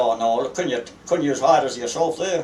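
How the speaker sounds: ordinary talk, nothing marked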